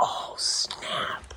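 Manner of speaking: soft unvoiced whisper under the breath.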